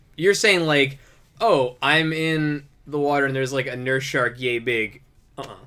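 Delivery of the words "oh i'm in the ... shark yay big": ordinary talk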